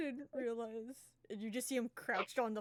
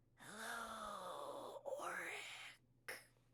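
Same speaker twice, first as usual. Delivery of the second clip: very faint, whispered, stretched-out voice; 10 dB quieter than usual. Voicing a mysterious figure greeting Oric: very faint drawn-out voice. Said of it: "very faint, kinda drawn out voice".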